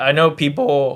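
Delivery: voice breaking mid-word on people. Ranking wide receivers for listeners' teams: voice crack. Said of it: "voice crack right there".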